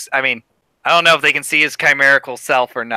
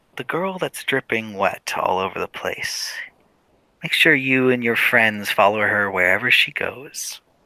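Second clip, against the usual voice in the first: soft whisper, very close; 2 semitones lower, 4 dB quieter than usual. Narrating a game scene, a character leans down to a rabbit's ear, whispering. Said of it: "he whispers".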